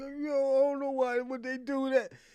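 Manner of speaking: high, weepy, blubbering crying voice. Retelling how someone cried to them in the live chat: mock crying. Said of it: "He cried to me like".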